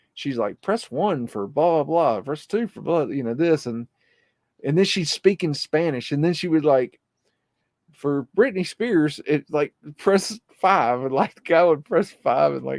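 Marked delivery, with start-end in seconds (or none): 0.6-3.1 recorded, automated phone-menu prompt voice. Retelling how she acted like the automated phone voice for callers: imitating automated phone voice. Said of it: "the the automated voice".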